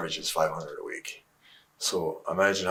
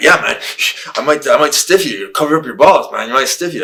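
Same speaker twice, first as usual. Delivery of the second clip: fired-up, hyped, high and loud excitement; 7 semitones higher, 13 dB louder than usual. Retelling what a match opponent said before his move: imitating excited Shane McMahon. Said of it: "he got all excited".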